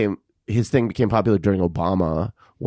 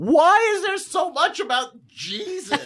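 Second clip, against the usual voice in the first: put-on very high, yelled-out outburst. Speaker quotes him yelling out after watching YouTube shorts, retelling a yell. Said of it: "he just like yells out".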